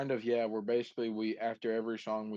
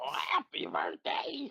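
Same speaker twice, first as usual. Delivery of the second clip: roughened, creaky voice. Wishing someone a happy birthday as a joke: imitating Brian. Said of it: "There's my Brian impression".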